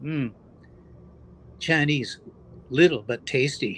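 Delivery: easy, slow, unhurried, drawn-out aside. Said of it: "Jerry very quietly says".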